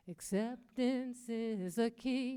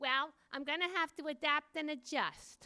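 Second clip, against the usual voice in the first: put-on with a Brooklyn accent; 4 semitones higher than usual. Retelling a woman's answer when asked how she was, in a Brooklyn accent. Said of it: "with her Brooklyn accent".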